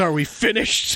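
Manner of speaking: put-on gruff old man voice. Retelling a scene where one man locks another in, as Skinner's old gruff man voice. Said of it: "with his old gruff man voice".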